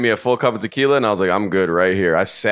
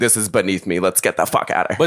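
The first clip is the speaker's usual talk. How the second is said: put-on angry, annoyed woman's voice. Retelling a woman's complaint about standing: imitating an angry woman. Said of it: "actually pissed off".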